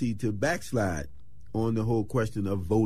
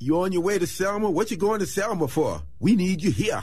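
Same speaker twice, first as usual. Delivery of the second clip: put-on Trinidadian accent, pitched way up; 9 semitones higher, 5 dB louder than usual. Retell Stokely questioning your group on the way to Selma, in Stokely's Trinidadian accent. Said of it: "with his Trinidadian accent".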